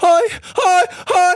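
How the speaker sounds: very high-pitched, loud screams, repeated over and over. Retelling how a guy screamed whenever the preacher spoke, imitating a guy screaming. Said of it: "the guy just started screaming".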